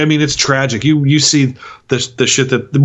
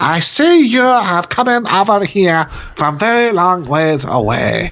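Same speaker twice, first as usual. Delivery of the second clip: put-on broken-English Japanese accent in old-film style; 4 semitones higher than usual. Describing how characters are made to speak, the speaker demonstrates an old Japanese movie accent. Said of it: "They have them speak like they speak in those old time Japanese movies".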